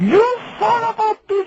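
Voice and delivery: very high, screeching mock scream. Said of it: "she calls me up and she goes".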